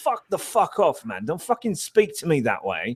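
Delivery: acted angry outburst, English accent. Retelling how an annoyed acquaintance from England snapped: imitating an angry man from England. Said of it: "I did end up pissing him off".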